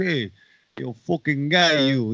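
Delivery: really bad, heavily laid-on Brooklyn accent. Mimic the movie cop looking for his man, in Steven Seagal's really bad Brooklyn accent. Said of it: "with a really bad Brooklyn accent".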